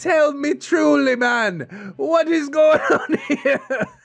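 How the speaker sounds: English accent slipping into Jamaican. Reading out someone's message aloud, slipping into a half jamaican accent. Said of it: "I shifted into like a half Jamaican accent".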